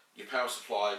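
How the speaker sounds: usual speaking voice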